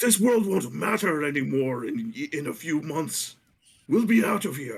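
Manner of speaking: high-pitched, furious, angry shouting. Narrating a large dragonborn hitting the table at someone, yelling. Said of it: "yelling at".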